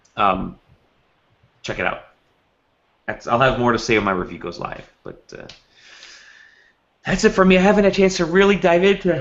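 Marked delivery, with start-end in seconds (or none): 7.0-9.2 pitched-up words pulled out of shape by yawning. Wrapping up a game talk segment, yawning while talking. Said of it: "I'm yawning".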